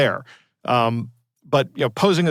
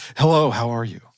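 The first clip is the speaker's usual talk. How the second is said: put-on sexy, seductive voice; 2 semitones lower than usual. Reading the scammer's texts aloud as the scammer: put-on sexy voice. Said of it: "I have to put on my sexy voice".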